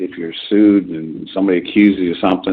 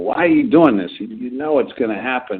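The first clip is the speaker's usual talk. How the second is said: imitated yelling, higher; 6 semitones higher than usual. Retelling a film scene where a lawyer yells at his client: imitating a lawyer yelling. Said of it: "he's sort of yelling at him".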